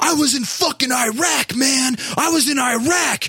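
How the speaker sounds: very high, slow, drawn-out hollering from afar. Retelling a guy yelling from fifty feet away, imitating his yell.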